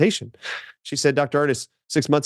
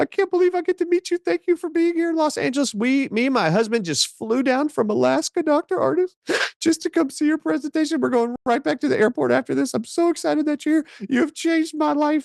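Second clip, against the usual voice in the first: very high, bawling, sobbing outpouring. Retelling a woman's tearful greeting before a presentation: imitating a crying woman. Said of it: "And she is bawling".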